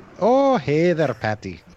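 very drawn-out, slow, loud put-on Irish accent. Giving a quick Irish accent when asked: put-on Irish accent. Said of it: "give me Irish real quick".

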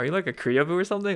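very high, needling, passive-aggressive tone. Retelling calling her out for saying oppa, super passive-aggressive. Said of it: "I'm like super passive aggressive when I say".

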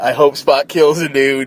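plain

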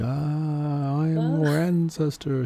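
eerie, high, very slow, very drawn-out ghost voice. Describing wartime helicopter broadcasts meant to haunt people, the speaker mimics them: ghost voice. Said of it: "kind of ghost voices".

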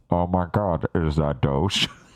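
clunky synthetic AI voice, low and slow. Imagining a bad AI voice reacting to a character: imitating the worst AI-generated voice. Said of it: "the worst A I generated voice popular going".

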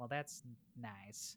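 soft, slow, hushed delivery. Imagining a reaction to the game: Mister Rogers impression. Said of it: "that's my Mister Rogers impression".

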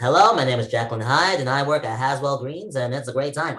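flamboyant drag queen character voice. Introducing oneself in a bit as Jacqueline Hyde: imitating Jacqueline Hyde. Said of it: "Is that your Snatch game?".

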